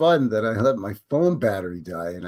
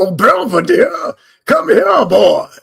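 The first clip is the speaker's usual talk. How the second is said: exaggerated, very high, booming, rasping Southern colonel drawl; 10 semitones higher, 12 dB louder than usual. Showing the exaggerated old-timey Southern Colonel voice from Looney Tunes. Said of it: "the exaggerated old-timey Southern Colonel voice from the Bugs Bunny Looney Tunes cartoon".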